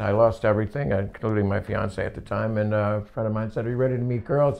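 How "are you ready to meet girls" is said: ordinary delivery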